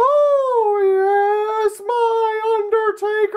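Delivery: very high, drawn-out cartoon voice, oh stretched. Annoying people by walking up behind them, in a Mickey Mouse-like voice. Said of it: "too much like my Mickey Mouse impersonation".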